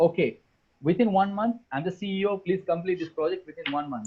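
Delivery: ordinary talk, nothing marked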